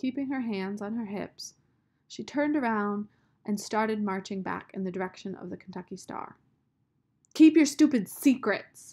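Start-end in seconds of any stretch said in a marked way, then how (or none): 7.3-8.9 very loud, high-pitched shouting. A girl marching away from someone who keeps secrets, shouting. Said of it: "she shouted".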